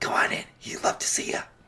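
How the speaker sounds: very soft, quiet whisper. Voicing a character at the door, whispering: Varric whispering. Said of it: "You're gonna hear Varric whispering".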